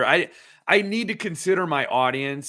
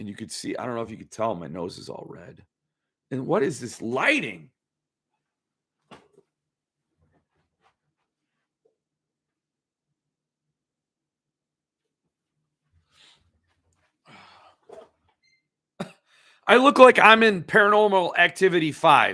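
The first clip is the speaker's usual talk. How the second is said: rough, gravelly, gravel-edged voice; 3 dB louder than usual. On a live stream, speaking to the camera: gravelly voice. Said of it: "this voice is gravelly".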